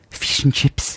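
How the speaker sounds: attempted, put-on New Zealand accent. Asked by a friend to say a phrase the New Zealand way, New Zealand accent. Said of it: "give me the word fish and chips in New Zealand".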